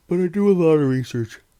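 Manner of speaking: very loud, spoken through a yawn. Late at night, talking while yawning a lot: yawning while talking. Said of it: "I don't know why I'm yawning so much".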